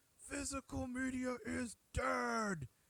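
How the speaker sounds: very high pitched, very slow, very drawn out delivery. Quoting a friend's favorite line about physical media: imitating Rainier. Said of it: "I'm gonna do my best impersonation".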